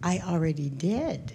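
barely audible, very quiet, hushed voice. Retelling a reply given at dinner during a talk: retelling a very quiet reply. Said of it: "I just very quietly said".

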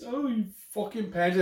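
put-on British accent. Repeating what a woman once said, trying a British accent that sounds pikey-like. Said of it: "I think I sound more like a pikey".

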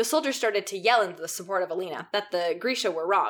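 ordinary delivery, nothing marked

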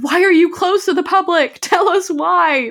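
put-on, stretched, very high, drawn-out scream. At a closed entrance, the speaker reenacts demanding to be let in: retelling own screaming. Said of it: "i was just like screaming".

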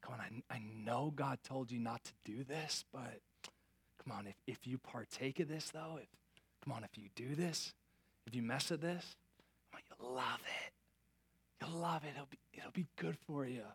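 soft, hushed, enticing stage whisper. Voicing the enemy who half-whispers to us: imitating the enemy half-whispering. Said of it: "he whispers to us".

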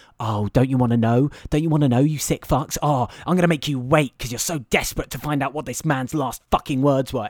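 sneering, mocking, taunting tone. Voicing the film as if it taunts its viewers: mocking the audience as the film. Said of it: "that's the film going".

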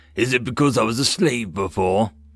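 ordinary delivery

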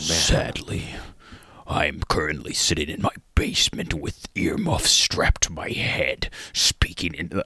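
put-on deep narrator voice. A grown man describing himself in mock narration, Meat Canyon impression. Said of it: "That's my Meat Canyon impression".

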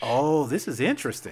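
ordinary delivery

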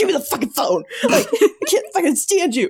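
high-pitched angry ranting. Speaker retells a heist scene where a character takes the phone, imitating an angry yell. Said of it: "he's so mad".

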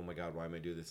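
ordinary talk, nothing marked

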